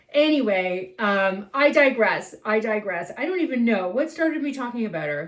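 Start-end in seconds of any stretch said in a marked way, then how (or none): none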